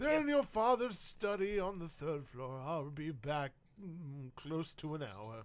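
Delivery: put-on aged, old household butler voice. The family's longtime butler replies about fetching maps, in an old family butler voice. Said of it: "This is your family's butler as long as you've been alive. / He'll say, / [name], old [name] Rocket, / This is your family's butler as long as you've been alive".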